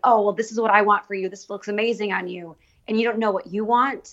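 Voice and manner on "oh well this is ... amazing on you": normal talking voice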